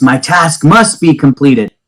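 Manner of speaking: grand, proclaiming, called-out tone. A figure sixty feet in the air turns to face its attackers, yelling in a booming voice. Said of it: "It's yelling out in a booming voice".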